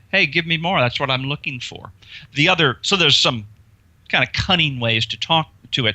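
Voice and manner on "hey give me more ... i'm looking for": goading, provocative, taunting, daring tone. Showing how to talk to a phobia: provocative, taunting. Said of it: "being a little more provocative with the phobia".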